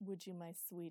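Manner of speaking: ordinary delivery, nothing marked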